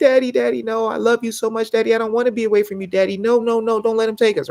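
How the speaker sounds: mock sobbing, high, begging small-child voice. Retelling a son's tearful plea not to be taken away: imitating Baby Sniffles crying. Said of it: "he was sitting on my chest and he was crying".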